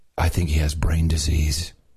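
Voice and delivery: low, unvoiced, gossiping whisper. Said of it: "your neighbors will be saying".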